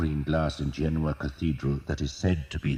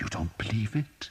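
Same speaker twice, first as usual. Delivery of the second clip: hissed, with pitch rising up; 5 semitones higher, 3 dB quieter than usual. Brother Germain challenges Thomas's doubt about the prophecy: hissing. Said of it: "He hissed".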